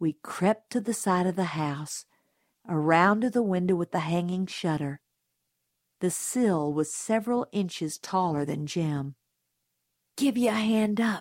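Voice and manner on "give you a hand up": mumbled, muttering delivery. Creeping to a house window, a boy speaks to his friend, muttered. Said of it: "he muttered to Dill".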